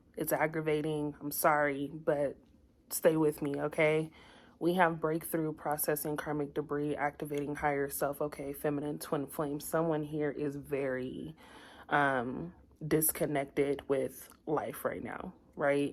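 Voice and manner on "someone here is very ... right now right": slow, shaky, trembling and wavering voice. Giving a twin flame reading to listeners, the speaker's voice gets shaky. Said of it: "my voice got shaky".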